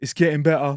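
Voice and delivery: fake put-on English accent. In a guessing game, giving a clue by quoting his catchphrase, put-on english accent. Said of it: "His thing is like".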